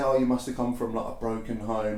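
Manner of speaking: ordinary talk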